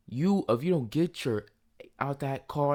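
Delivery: mock heated, mildly angry half yell. Speaker recounting being ordered out of a car, retelling her yell. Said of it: "She yells".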